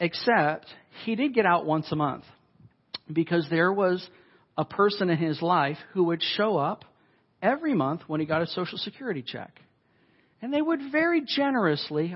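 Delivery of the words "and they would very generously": sarcastic, pitched very high. Speaker telling listeners about a person who visited a man monthly, sarcastic. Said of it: "I hope you hear my sarcasm".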